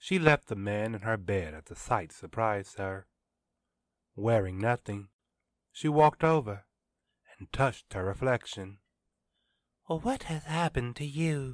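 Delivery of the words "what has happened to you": soft, higher murmur, half to herself. A woman speaks to her own reflection in the mirror; murmured. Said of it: "she murmured".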